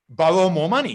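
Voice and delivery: plain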